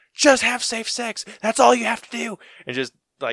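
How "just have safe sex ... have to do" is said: furious yell, very high and very loud. Imagining the killer storming through the forest: Jason angrily yelling. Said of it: "just bitching them out".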